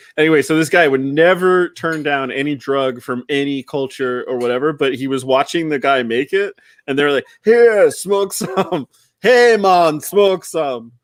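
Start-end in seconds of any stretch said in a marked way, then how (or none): 7.5-10.8 slow, raised put-on Jamaican accent. Telling a funny story, the speaker voices a man in it in a put-on Jamaican accent. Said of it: "he's Jamaican sounding again".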